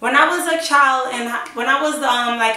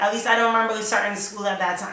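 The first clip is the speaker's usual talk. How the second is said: plain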